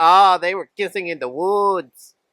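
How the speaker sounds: full-on exaggerated Mexican accent. Telling a story, voicing everyone else's reaction in a stereotypical mexican accent. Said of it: "That's my most stereotypical uh, Mexican accent I can do".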